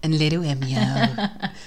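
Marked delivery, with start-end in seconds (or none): 0.0-0.8 low, soft, silly put-on voice. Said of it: "Why are you speaking like this?".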